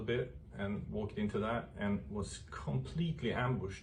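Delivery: ordinary delivery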